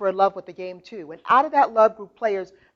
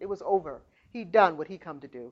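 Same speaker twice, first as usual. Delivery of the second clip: ordinary delivery, nothing marked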